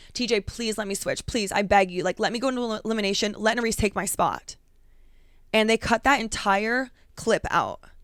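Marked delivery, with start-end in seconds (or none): 0.1-4.5 put-on desperate, begging tone. Retelling asking t j to switch places: retelling own desperate plea. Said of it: "And I was like".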